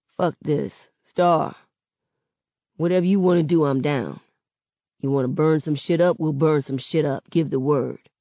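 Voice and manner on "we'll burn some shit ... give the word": plain reading voice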